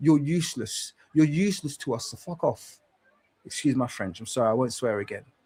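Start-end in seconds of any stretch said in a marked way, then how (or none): 0.0-2.8 furious, fed-up, angry and dismissive tone. Ranting against spineless figures who won't go against the media, speaking angrily. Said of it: "I'm very angry right now".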